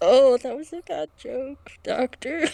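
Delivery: spoken through stifled laugh. Voicing a character reacting to the inmate's joke: speaking through a choked laugh. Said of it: "a little choked laugh, and he goes".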